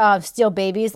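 ordinary talk

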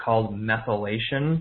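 "methylation" said slow, drawn-out, deliberate and careful. Introducing a term to listeners, saying it slowly. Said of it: "I'm going to say it slowly".

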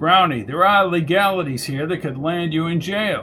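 plain

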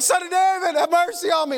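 pretend yelling. A comedian acts out crying for help to a holy figure, putting on the screaming. Imitating screaming. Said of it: "I'm screaming".

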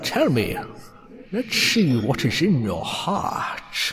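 voiced as a great dragon. Voicing a grinning dragon who charms a half-elven player: dragon voice. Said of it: "holds up to his glass eye and reads it".

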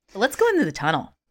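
upbeat, sunny, cheerful, bright. Responding to the other speaker's remark, cheerfully. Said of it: "She says cheerfully".

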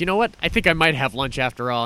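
ordinary delivery

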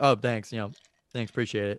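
put-on casual, offhand tone. Retelling how a driver who cut them off waves and thanks them. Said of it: "and then they go".

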